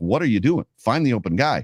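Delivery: normal talking voice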